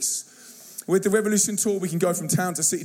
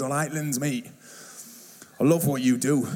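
put-on proper northern English accent, low and matey; 4 semitones lower than usual. Quoting a guy who stands up to greet the speaker, proper northern accent. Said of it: "he's got a proper northern accent".

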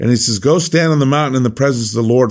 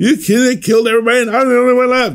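put-on mock whining, much higher pitch; 12 semitones higher than usual. Acting out a man stating his case to God, mock whining. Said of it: "he's kind of whining a little bit".

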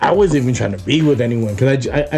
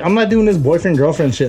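ordinary delivery

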